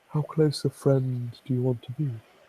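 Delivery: soft half-whisper, right close to the ear. A fanged creature leans in close to her neck and speaks, half-whisper. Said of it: "before he whispers in her ear".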